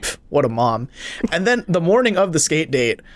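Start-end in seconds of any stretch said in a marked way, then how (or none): none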